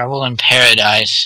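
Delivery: voice of a demon. Recounting a scene after a character leaves the room, a demonic voice speaks up. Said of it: "that sort of demonic voice pipes up again and goes".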